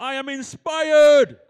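energetic, inspired, very loud, high, slow shout.

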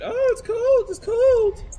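put-on very high, very loud, very slow little girl whine. Retelling a complaint overheard, imitating a whiny little girl. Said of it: "like some little girl was going".

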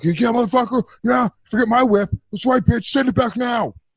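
put-on very high, enraged, furious cursing rant. Acting out how the complaint call really goes: imitating an angry complaint call. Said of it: "I can't control my anger".

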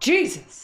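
very high-pitched, blurted, acted-out exclaimed cry. Reading a billboard aloud as someone exclaiming: imitating someone exclaiming. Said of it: "I read it as someone going".

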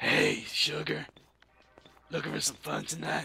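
put-on raspy, smoker's old-lady voice. Speaker mimics a man who sounds like an old smoking woman: old woman smoker's bad voice. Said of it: "like an old woman who was smoking cigarettes and has like a really bad voice".

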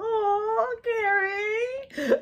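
very high, soft, smiley giddy swoon. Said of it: "She all smiley, giddy, giddy".

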